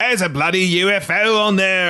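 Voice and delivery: put-on Australian accent, pitched very high. Quoting what the aviation authorities said, in a put-on Australian accent. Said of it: "That Australian accent was better".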